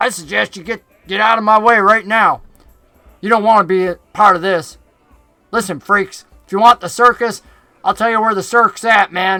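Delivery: loud southern goblin voice. A narrator voicing Finch confronting Huxley and Clack, in his southern goblin voice. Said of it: "the goblin from the north with the southern accent".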